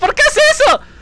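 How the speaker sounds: high, loud, startled yelling.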